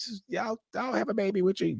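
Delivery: mock sweet, high, soft cooing tone.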